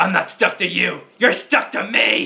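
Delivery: loud, menacing delivery in an acted voice. In a tabletop game, a player answers an enemy in character: threatening in character. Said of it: "in character, I threaten back to him".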